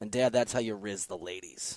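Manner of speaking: put-on plain, unfussed, deadpan matter-of-fact tone. Retelling what the kid said to Dad, imitating a matter-of-fact tone. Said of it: "turns to me matter-of-factly and goes".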